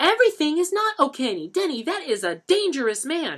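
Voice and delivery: very high-pitched, severe, stern tone. Claudette answers denny after he admits owing a man money: lecturing. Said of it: "[name] lectured. / Mom, please. / Mom, please. / [name] lectured".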